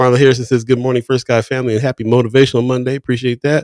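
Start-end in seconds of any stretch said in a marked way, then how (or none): none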